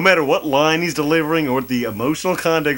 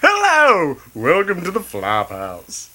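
mocking radio announcer voice. Teasing the co-host by copying his show intro, mocking radio announcer voice. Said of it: "He's so like".

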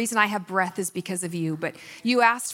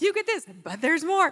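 infomercial announcer pitch voice, much higher; 8 semitones higher than usual. Speaker jokingly slips into sounding like an infomercial: infomercial announcer voice. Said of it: "I was just about to sound like an infomercial".

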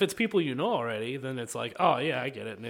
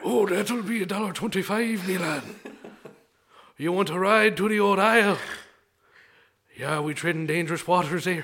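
put-on loud, pitched-up Irish accent; 5 semitones higher, 5 dB louder than usual. Improvising a requested character: Irishman living in New England voice. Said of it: "an Irishman who's living in New England".

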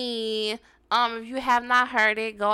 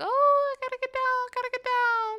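put-on bird voice, much higher; 12 semitones higher, 3 dB quieter than usual. Explaining how birds act instead of chirping, voicing one: imitating a bird. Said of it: "instead of chirping, they just like".

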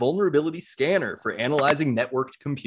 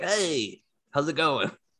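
easygoing, nonchalant, totally relaxed, laid-back tone. Imagining the devil inside a bucket of chicken, the speaker voices him: the devil's voice. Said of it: "Is that what the devil sounds like?".

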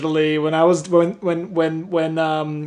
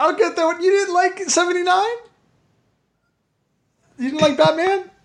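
high-pitched, squeaky voice; 13 semitones higher than usual. Asking in disbelief whether another speaker disliked the book: high-pitched voice. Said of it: "I love it when [name] goes high-pitched".

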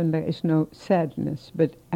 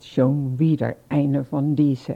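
put-on contemptuous, disdainful sneer in German; 3 semitones lower than usual. Retelling what a man said after an arrest: imitating a disdainful sneer. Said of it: "very dis-, disdain".

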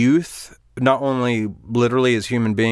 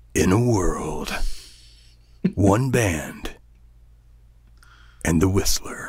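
deep, slow movie-trailer announcer voice; 4 semitones lower than usual. Joking about making a trailer voiceover: movie trailer voiceover voice. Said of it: "Voiceover, like".

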